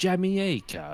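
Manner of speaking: "Jamaica" squeaked out strangely, very high. Retelling how Matt Gourley's Ian Fleming says a word: imitating Matt Gourley's Ian Fleming voice. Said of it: "instead of saying Jamaica in a British accent, he'll go".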